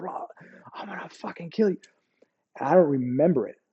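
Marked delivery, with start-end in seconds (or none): 0.0-1.8 put-on hushed, raging, furious whisper. Retelling being held down while coming out the turret: imitating own furious cursing. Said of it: "I was saying every cuss word I knew".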